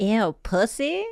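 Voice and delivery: flamboyant, camp character voice.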